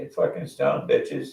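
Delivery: rowdy, rough, creaky half-yell. Retelling shouting out the back window: imitating own past scream. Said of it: "so I screamed".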